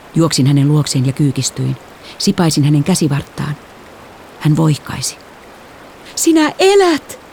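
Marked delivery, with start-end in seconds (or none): 6.1-7.1 shrill, very high shout. The narrator finds a moaning, injured person on the shore and calls out: shouted. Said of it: "Minä huusin".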